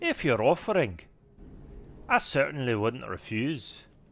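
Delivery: put-on mixed Scottish and Irish accent. Acting a scene, the speaker answers in a Scottish-Irish accent. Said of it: "Hard for me to kind of juggle between the two".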